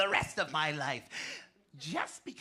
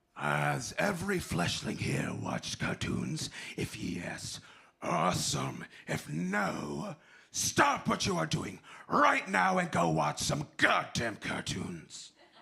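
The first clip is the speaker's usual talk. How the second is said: rough, creaky, ground-out voice. Voice actor explaining voiceover to an audience: Megatron voice. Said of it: "You heard Megatron, right?".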